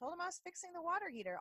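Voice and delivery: very high, offhand, nonchalant, no-big-deal tone. Retelling what an ex said about a ghost: imitating a nonchalant reply. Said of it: "all nonchalant".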